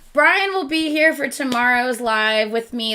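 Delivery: normal talking voice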